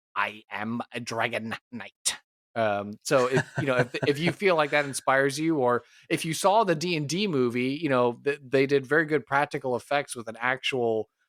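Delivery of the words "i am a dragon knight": weird, slow, lipless-sounding voice. Quoting a writer showing how lipless Dragonborn talk: weird Dragonborn voice. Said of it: "they gotta talk, like, in a real weird sort of a way".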